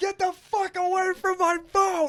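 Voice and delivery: put-on very high, drunken hollering yell. Retelling how a drunk shirtless man yelled at kids about his boat: imitating a drunk man yelling. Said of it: "he's yelling at kids".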